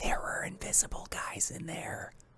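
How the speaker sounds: quiet whisper.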